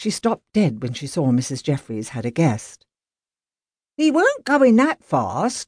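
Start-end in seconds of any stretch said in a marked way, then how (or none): 4.0-5.7 very high, defensive, drawn-out voice. Reading a character's reply in a story, defensive. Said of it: "Wiggins said defensively".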